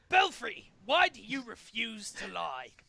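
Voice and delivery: booming, slow, fiendish voice. The villain needles a trapped hero with a question, fiendish Orkestria voice. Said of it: "The fiendish [name] Orkestria has our heroes trapped in a prison of his own design, and the only way to escape is to play his impossible, unwinnable games. / leaving only [name] and [name] to compete".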